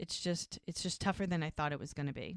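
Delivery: ordinary delivery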